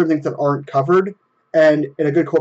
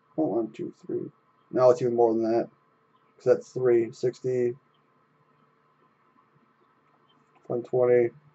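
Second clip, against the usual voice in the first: stoned delivery, quieter; 3 semitones lower, 8 dB quieter than usual. Doing markup math out loud while admitting to being high, sounding stoned. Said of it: "I'm really high right now".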